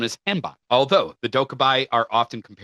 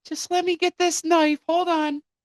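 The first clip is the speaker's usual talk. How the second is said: very high-pitched, haunted possessed toy character voice. Acting out a dead child's possessed toy speaking to the parents: possessed toy voice. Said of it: "becomes possessed".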